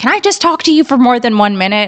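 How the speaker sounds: angry, annoyed, high-pitched voice. Recounting leaving to feed the dog, the speaker imitates a man who got angry. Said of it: "this guy got really angry at me and was like".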